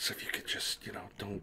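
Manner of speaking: quick, quiet whispering.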